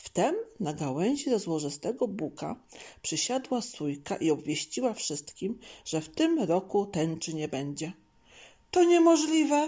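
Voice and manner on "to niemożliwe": very high, loud, outright shout. A hedgehog shouts back after a jay announces news to all the animals. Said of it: "krzyknął jeż".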